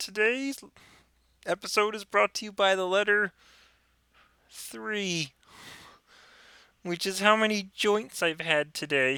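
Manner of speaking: very high-pitched, puppet-style voice. Retelling a sketch where Kermit and Big Bird smoke a bong, doing Kermit the Frog's voice. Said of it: "haven't heard his Kermit the Frog yet".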